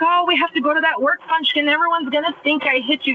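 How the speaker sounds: put-on exasperated complaining. Recounting what he said about a work function, retelling an angry complaint. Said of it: "and he was pissed".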